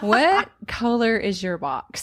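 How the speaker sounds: very slow, swooping delivery breaking into laughter. Asking the others a question, laughing while talking. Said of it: "Can't even say it with a straight face".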